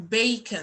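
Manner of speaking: stressing the word 'bacon'. Explaining sentence stress on content words, with stress on 'bacon'. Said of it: "هبقى بستريس bacon اكتر".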